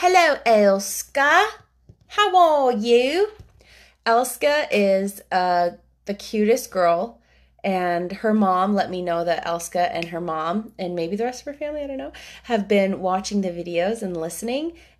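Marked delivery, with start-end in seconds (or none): 0.0-3.3 thick, broad Yorkshire accent, loud, slow, very drawn out. Greeting a friend named Elska a second time: broad Yorkshire accent. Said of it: "Or should I say in a broad Yorkshire accent?".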